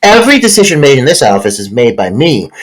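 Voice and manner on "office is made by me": ordinary talk, nothing marked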